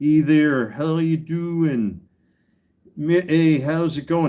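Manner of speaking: put-on slow, easygoing, friendly Midwestern accent. Recalling how his brother greeted everyone, in a Midwest accent. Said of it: "he would do the same thing in his Midwest voice".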